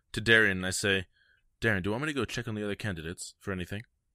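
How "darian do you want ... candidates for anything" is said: hushed half-whisper, voice dropped low, quick. In a role-played scene, a character speaks aside to darian in a low half-whisper. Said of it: "I kind of whisper in a little bit of a lower voice".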